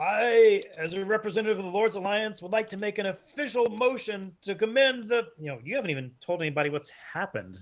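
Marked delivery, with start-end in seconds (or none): 0.0-5.3 loud, raised, projecting call. A dwarf representative speaks up over general commotion, speaking loudly. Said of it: "he speaks loudly and he says".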